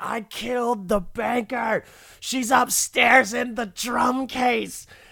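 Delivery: play-acted, very high-pitched, all-out scream. Retelling how Kinison told everybody once Marty left his office, imitating Sam Kinison screaming. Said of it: "Kinison just starts screaming".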